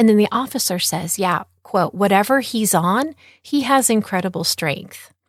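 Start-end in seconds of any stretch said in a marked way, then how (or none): none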